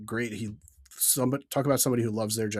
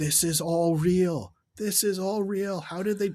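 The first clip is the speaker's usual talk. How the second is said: put-on girl scream, higher; 8 semitones higher than usual. Retelling a young girl on a boat ride: imitating a girl screaming. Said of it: "was just screaming".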